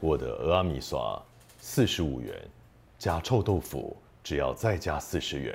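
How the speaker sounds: slow, magnetic commercial ad announcer voice. Answering a request to say silly things: magnetic announcer voice. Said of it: "听起来很像广告".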